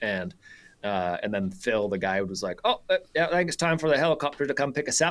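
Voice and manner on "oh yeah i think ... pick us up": put-on easygoing New Zealand accent, slightly raised pitch. Retelling what the guide said on a hunt: New Zealand accent. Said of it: "That was a pretty good New Zealand accent".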